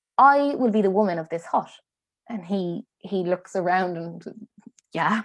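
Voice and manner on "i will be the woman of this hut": put-on steady, firm, clear, resolute delivery. Storyteller voicing a woman who turns to the man watching her, firm and clear. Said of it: "she says very firmly and clearly".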